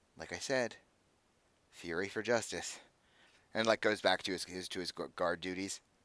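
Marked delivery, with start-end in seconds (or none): 0.2-2.8 muttered under the breath, much quieter. Retelling what a guard says before returning to guard duty: quietly under the breath. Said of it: "quietly says under his breath".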